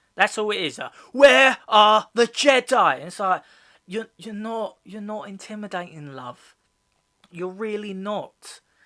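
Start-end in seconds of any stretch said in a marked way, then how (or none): 1.2-3.0 put-on shouting, much higher and louder. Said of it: "all she does is she shouts".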